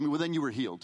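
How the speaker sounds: ordinary talk, nothing marked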